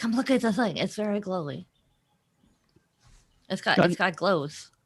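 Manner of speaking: very quiet, hushed voice. Calling friends over to a glowing platform so nobody hears: speaking very quietly. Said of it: "I'm also speaking very quietly so nobody will hear me".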